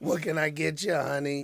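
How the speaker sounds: hoarse, rough-throated diner waitress voice. Speaker with a rough throat jokes to the gentlemen, rough waitress voice. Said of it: "I sound like a waitress at the Paper Tiger".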